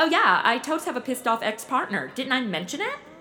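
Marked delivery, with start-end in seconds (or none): none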